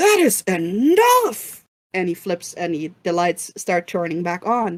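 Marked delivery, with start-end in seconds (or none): 0.0-1.6 barking, high, swooping drill-sergeant scream. The community center caretaker cuts through the screaming: [name]'s drill-sergeant scream. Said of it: "screams in his old drill sergeant voice over it".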